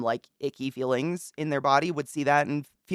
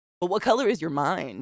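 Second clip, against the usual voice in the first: put-on snappy comeback retort; 3 semitones higher than usual. Quoting a man's line the way he says it, imitating a comeback retort. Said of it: "like a comeback".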